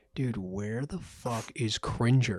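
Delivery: slow, hushed whisper under the breath. Retelling what was said quietly during the movie: retelling a whisper. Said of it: "I whispered over to Leon and I went".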